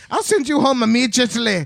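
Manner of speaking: put-on shrill, booming, atrocious accent, read high and loud. Reading Dorothy's phonetically spelled dialect line aloud: reading Dorothy's phonetic dialect. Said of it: "her atrocious accent".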